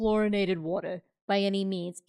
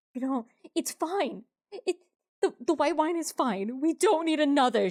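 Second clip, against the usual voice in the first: high, placating, pleading tone; 6 semitones higher than usual. Voicing Madeline, who is stress smoking and begging Lorelai: pleading in character. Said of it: "begging Lorelai".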